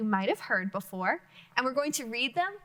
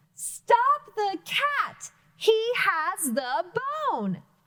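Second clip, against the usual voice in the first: excited, high-pitched, deliberate reading voice; 9 semitones higher, 4 dB louder than usual. Demonstrating how an exclamation mark changes the reading, excited reading. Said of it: "I had to say that excitedly".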